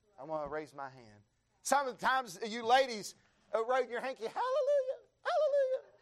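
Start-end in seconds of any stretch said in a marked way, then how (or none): 4.2-5.8 put-on girlish voice, very high. Preacher imitating ladies raising their hankies, girly voice. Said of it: "That's my girly voice".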